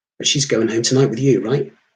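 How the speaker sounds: plain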